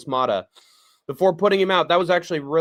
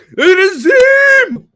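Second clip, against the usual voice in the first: very high, very loud, shrill, badly done voice; 10 dB louder than usual. Announcing the next fight, riffing on 'Battle of the Zims', bad Zim impression. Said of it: "that's a bad Zim impression".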